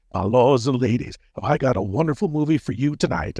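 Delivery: spooky horror-host voice. Speaker recalls practicing his host voice while driving to his first show, Lord Blooddraw horror-host voice. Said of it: "I was practicing the voice".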